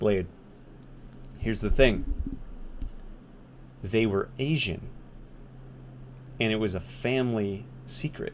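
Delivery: imitated whispering. Retelling what a friend whispered while leaning in: imitating a friend whispering. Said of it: "He leans in and he whispers".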